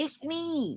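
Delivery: barely audible, breathless, raspy, winded voice. Retelling a barely audible person's reply, imitating a raspy, winded voice. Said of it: "The voice is real raspy, and it's like me, you know, like like like they're winded".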